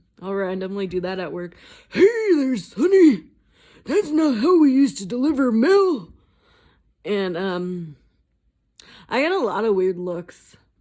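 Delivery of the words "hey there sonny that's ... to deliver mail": put-on elderly man voice, loud and high. Showing a voice they randomly do at work, in old man voice. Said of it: "wanted to hear my old man voice".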